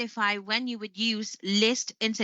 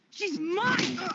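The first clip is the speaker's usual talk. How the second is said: upset, very high-pitched outburst; 10 semitones higher than usual. A film clip from the Twilight Saga, upset exclamation. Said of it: "She was really upset there".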